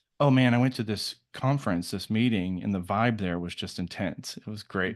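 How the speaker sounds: plain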